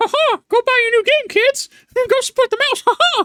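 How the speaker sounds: very high, laughing cartoon mouse voice. Acting out Mickey Mouse in a game recap: Mickey Mouse voice. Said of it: "South Park and Mickey Mouse".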